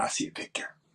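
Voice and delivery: soft, hushed whisper. Retelling hearing a voice while looking at a mirror: imitating a whisper. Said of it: "that voice whispered back to me and said".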